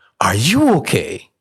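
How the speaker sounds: eager, worked-up excitement. Retelling how a man greeted him at the park: imitating an excited man. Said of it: "he's excited".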